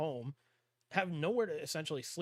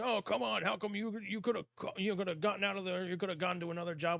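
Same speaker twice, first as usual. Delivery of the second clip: mild heckling outcry, called out; 4 semitones higher than usual. Imitating an imagined critic who asks why they didn't leave: imitating someone screaming. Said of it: "somebody out there screaming like".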